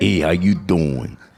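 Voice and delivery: put-on deep manly voice. Saying hello with a cold, joking about the voice: put-on manly radio voice. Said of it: "It's a good radio voice".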